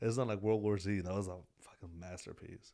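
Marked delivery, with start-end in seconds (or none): 1.0-2.7 sarcastic tone meaning the opposite. Talking about World War Z with friends: sarcastic. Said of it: "I say that sarcastically".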